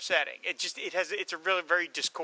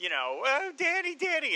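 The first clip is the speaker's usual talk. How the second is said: mock screaming, much higher pitch; 10 semitones higher than usual. Recapping a scene, the speaker acts out a woman's fake screaming for him. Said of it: "And she starts screaming".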